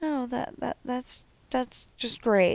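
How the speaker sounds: high, sarcastic, stuttering false cheer on great. Reacting to your own mistake while working, sarcastic. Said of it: "Notice I'm being sarcastic about that".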